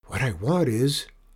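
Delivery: plain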